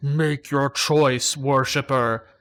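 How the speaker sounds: drawn-out, slow, authoritative, commanding tone. Narrating to the listeners, the speaker voices a second presence entering their minds, booming. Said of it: "Booming, it declares".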